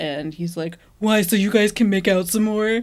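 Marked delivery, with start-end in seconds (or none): 1.0-2.8 as annoying as possible, pestering and needling. Recapping a TV episode, retelling a character's retort to the others: Jeremy's annoying voice. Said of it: "Your voice is exactly how he said it".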